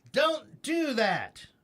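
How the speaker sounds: pitch drops at the end on "that". Explaining question versus statement intonation, demonstrating falling statement intonation. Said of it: "It's down".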